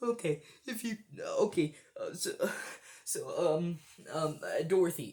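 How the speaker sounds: play-acted tearful, blubbering stammer, sobbing, swooping up and down. Retelling going up to his wife in the car park on Mother's Day: put-on sobbing voice. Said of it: "in a very sobbing like voice".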